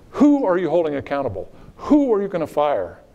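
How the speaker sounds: acted heated voice, high with swinging, swooping pitch. Retelling a senator screaming about a failing acquisition program: imitating Senator McCain screaming. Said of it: "And he screamed".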